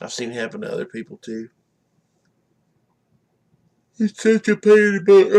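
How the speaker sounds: speaking through a yawn. After working a sixteen-hour shift, the speaker talks while yawning. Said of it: "I'm sorry, I'm yawning".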